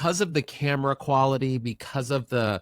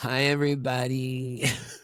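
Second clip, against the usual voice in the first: sick-sounding, under-the-weather voice. After two weeks of being sick, greeting everybody: sick voice. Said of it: "I can now successfully do my sick voice".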